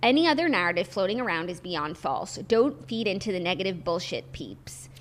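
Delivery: ordinary talk, nothing marked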